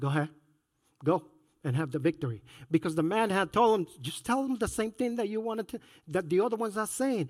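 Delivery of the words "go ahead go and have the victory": deep, dropped voice, heavy with sarcasm. Retelling a man's answer when asked whether they should go: retelling a sarcastic reply. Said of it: "He literally uses sarcasm".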